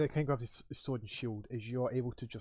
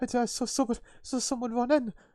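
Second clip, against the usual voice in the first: high, loud alarmed voice.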